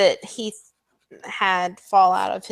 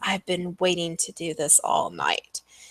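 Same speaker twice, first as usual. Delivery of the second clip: close, fast, breathy half-whisper; 2 semitones lower, 6 dB quieter than usual. Game master voicing Sibella behind a player's back, Sibella's breathy half-whisper. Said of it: "a breathy whisper in your back".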